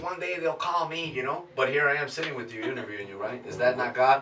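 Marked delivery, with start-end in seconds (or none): 0.0-1.1 mock sarcastic, scoffing, pitched-up aside. Speaker retells what they told the Lord a year ago: retelling a mocking remark. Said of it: "I said it mockingly".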